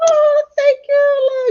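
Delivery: tearful, near crying, very high and slow. On air, a guest thanks the host, on the verge of tears. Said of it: "You're gonna make me cry too".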